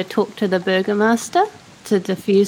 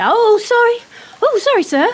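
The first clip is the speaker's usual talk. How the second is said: very high-pitched, sudden blurt; 13 semitones higher, 3 dB louder than usual. Faking a stumble into a companion, then apologizing: blurted apology. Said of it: "I'm gonna blurt".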